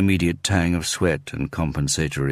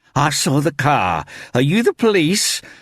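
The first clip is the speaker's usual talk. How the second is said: very high-pitched, shrill voice; 11 semitones higher, 6 dB louder than usual. Narrator voicing a woman blocking the stairs, in a high-pitched, shrill voice. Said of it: "she asked in a high-pitched, shrill voice".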